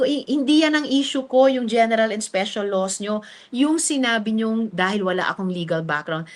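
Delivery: normal talking voice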